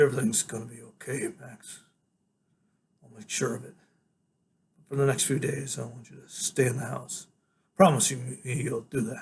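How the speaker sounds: put-on old, tired voice. Reading a story aloud, voicing a character standing up from a bed: old, tired voice. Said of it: "in this real old, tired voice, he says".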